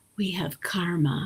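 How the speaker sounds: put-on whisper. Retelling what someone whispered in the speaker's ear: imitating Deepak whispering. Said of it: "whispering in my ear".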